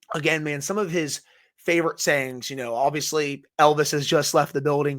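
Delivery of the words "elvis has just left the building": plain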